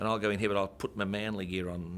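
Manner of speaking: plain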